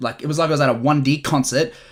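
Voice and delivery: ordinary talk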